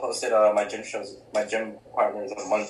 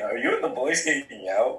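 ordinary talk

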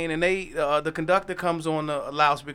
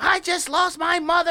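put-on angry ranting, higher pitch; 13 semitones higher, 4 dB louder than usual. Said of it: "just going off".

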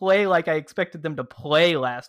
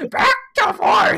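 put-on shrill, loud, grouchy old grandma voice pitched way up; 5 dB louder than usual. Joking around, repeat your prediction in a grumpy old grandma voice. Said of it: "It was like my grumpy old grandma voice".

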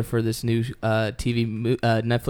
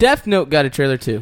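loud yelled voice; 3 semitones higher, 7 dB louder than usual. Sharing show news in front of an audience, yelling. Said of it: "why are you yelling?".

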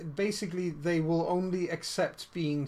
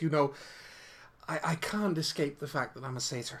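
coy, coquettish, very flirtatious voice. Voicing a satyr character who looks over her shoulder: very flirtatious voice. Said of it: "bats her eyelashes in a very, very flirtatious way and goes".

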